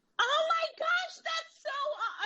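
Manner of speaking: very high-pitched, surprised, gushing voice. Surprised with a two-thousand-dollar donation, the speaker reacts in a high-pitched voice. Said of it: "I'm sorry for the high-pitched voice".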